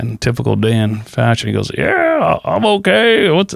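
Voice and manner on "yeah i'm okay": put-on drawl, higher. Retelling a friend's reply on the phone: terrible Dan impersonation. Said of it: "that's a terrible Dan impersonation".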